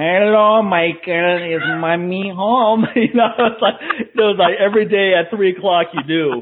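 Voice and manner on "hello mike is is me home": extremely grating voice, very slow drawl. Recalling an aunt who phoned every day, imitating her extremely grating voice. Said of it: "this extremely grating voice".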